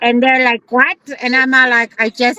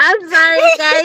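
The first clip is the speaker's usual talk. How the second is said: laughing while talking, higher pitch; 4 semitones higher than usual. Apologizing to the viewers while unable to stop laughing: laughing while talking. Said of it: "we're just cracking up".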